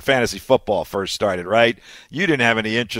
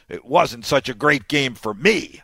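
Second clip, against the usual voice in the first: play-acted, very sullen, surly tone; 3 semitones higher than usual. Retelling someone's reply about the weekend's game, mock-surly voice. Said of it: "in a very surly voice".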